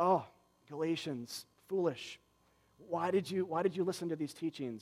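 sad, soft, let-down dismay. Acting out Paul rebuking the Galatians: imitating a sad, facepalming Paul. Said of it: "sad or facepalm version, uh, of Paul".

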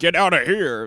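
high, loud, prim lady's scoff.

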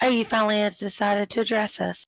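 syrupy, honeyed, sugary sweet voice. A woman replies when finally addressed along with the other ladies, in her sugar voice. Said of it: "she's using her sugar voice".

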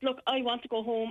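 ordinary talk

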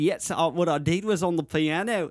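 put-on Australian accent. Retelling how a friend played an Australian character while recording music: imitating Ben's Australian character. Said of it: "an Australian character".

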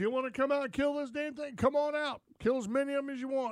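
eager, high-pitched tone. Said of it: "And he goes".

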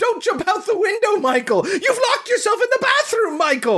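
very high, rushed, frantic hysterical panic. Retelling a scene, voicing the mother shouting at her son, imitating a panicked, hysterical mother. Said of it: "She's so worried and panicked".

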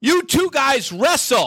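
very high, loud shouted yell. Telling a story about coming out on stage, retelling an audience member's yell. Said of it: "one guy yells out in the audience".

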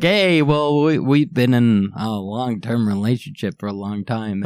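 ordinary talk

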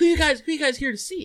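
put-on high, hyper, amped-up, wired chatter. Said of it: "this guy comes up to us, like, real, like, hyper".

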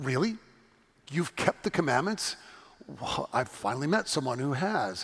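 mock startled, caught-off-guard disbelief. Retelling a Bible story, the speaker voices Jesus answering a man, acting Jesus startled. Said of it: "I hear Jesus with a startle in his voice".

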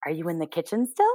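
hushed, low-volume voice. Narrator reads a girl calling into a hole, keeping her voice down. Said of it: "tries to keep her voice down".

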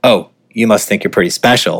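put-on hip hop swagger voice. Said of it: "in a very sort of, like, hip hop way".

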